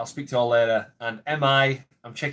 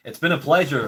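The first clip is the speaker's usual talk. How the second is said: fake, put-on American accent; 3 semitones higher than usual. Signing off a channel video, speaker switches to a put-on American accent. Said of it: "Do an American accent before I go".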